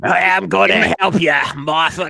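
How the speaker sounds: put-on old-fashioned grandpa voice. Playing an old-fashioned husband in a kitchen skit: old-school grandpa voice. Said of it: "I'm literally talking like my grandfather".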